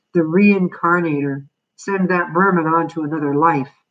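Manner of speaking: plain reading voice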